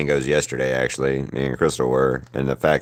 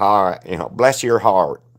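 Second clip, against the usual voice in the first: weird, shoddy, bad put-on Southern accent, pitched up; 6 semitones higher than usual. Speaker tells the group which voice they did: a weird Southern accent. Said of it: "it was my weird Southern accent".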